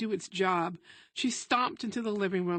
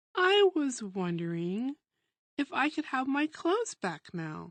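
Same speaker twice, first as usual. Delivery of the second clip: sugary-sweet, coaxing, sing-song tone; 3 semitones higher than usual. Diamond takes a deep breath and tries again with Missus Daniel, very sweetly. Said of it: "using a voice sweeter than cornbread".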